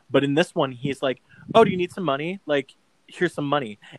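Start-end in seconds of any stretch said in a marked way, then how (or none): 1.5-3.7 joking tone. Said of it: "it's played so jokey".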